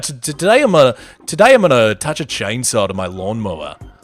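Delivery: bad, put-on Australian accent. Imitating the I Did a Thing creator: bad Australian accent. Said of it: "I don't have a good Australian accent".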